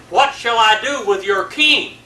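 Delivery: loud, high-pitched call.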